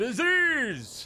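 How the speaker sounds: very high, loud shrieking scream. Loving a card's name, screaming it into the wind: screamed 'disease'. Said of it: "Just scream disease into the wind".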